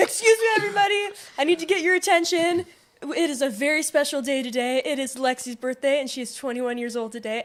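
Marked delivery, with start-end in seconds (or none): 0.0-6.0 loud announcement voice projected to fill a room. Retelling a performer's birthday announcement to a restaurant: imitating someone yelling to a crowd. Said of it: "raising his voice, yelling at this entire restaurant".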